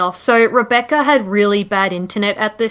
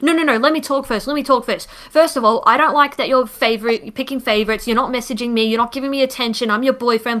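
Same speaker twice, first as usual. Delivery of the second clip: mock yelling and screaming, faster pace; 2 semitones higher than usual. Retelling how a boyfriend screamed at his girlfriend on a group call, retelling a screaming rant. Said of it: "he's just screaming, yelling at Rebecca".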